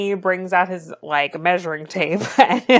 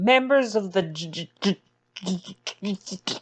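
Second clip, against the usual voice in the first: imitated nervous stutter; 4 dB quieter than usual. Retelling a movie scene, imitating a nervous lawyer's stutter. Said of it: "stuttering on every other word".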